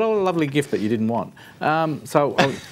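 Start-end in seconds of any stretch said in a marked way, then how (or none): none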